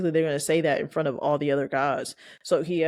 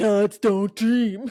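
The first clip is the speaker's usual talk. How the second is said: oddly heightened, high, raised pronouncement; 5 semitones higher, 5 dB louder than usual. Retelling a character's line from an episode: imitating a character, marked delivery. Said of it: "The way you said that".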